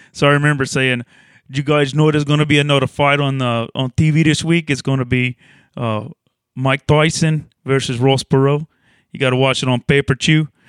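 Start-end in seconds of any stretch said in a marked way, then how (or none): 1.5-10.4 put-on Cajun accent. Retelling an old stand-up joke after being asked for the comedic cajun: cajun accent. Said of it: "give us a little of, uh, the comedic Cajun".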